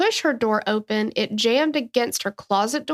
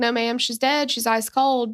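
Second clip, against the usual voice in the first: plain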